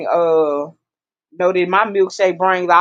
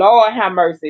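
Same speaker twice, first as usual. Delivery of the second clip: usual speaking voice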